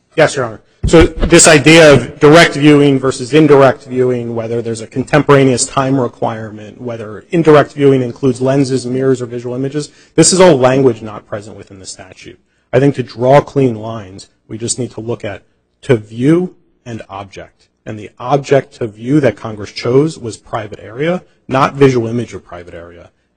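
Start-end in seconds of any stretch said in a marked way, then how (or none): 0.1-12.3 speaking up, louder and clearer. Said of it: "But do please speak up".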